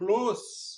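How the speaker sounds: stress on the word close. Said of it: "So we stress that".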